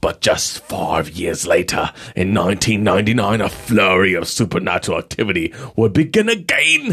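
put-on English accent. Narrating a story of supernatural activity, in a Baptist-style accent from England. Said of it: "I don't even know what accent that is".

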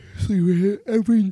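very high, very loud speech through a yawn. Gushing about him to listeners, yawning while talking. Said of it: "I'm yawning and talking".

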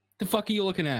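touchy, defensive snap in a high voice. Acting a gambler snapping at someone eyeing the machine: acting defensive. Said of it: "they get defensive".

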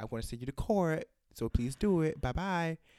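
put-on, sugary, very sweet, polite voice. Retelling a caller's voicemail threatening court: imitating a sweet, nice voice. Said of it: "very nicely and very sweetly".

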